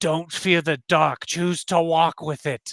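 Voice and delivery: speaking in a creature voice. Voicing a tendriled creature that grabs a player's head: voicing a water creature. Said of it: "and it says".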